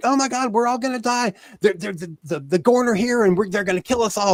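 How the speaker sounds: high, rushed, stammering, frantic panic. Recapping a scene, the speaker acts out a woman coming in, imitating frantic panic. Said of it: "she comes in the room frantic".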